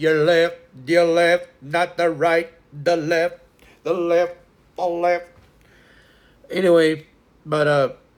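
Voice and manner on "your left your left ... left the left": drill sergeant cadence, higher and louder. Calling out left like the military: military drill call. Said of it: "doing it like the military".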